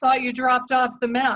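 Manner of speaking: slightly frosty, cold, sarcastic tone. Acting out a cold reply to a man who finally calls: acting cold and sarcastic. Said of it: "you're a little cold, or you're a little sarcastic".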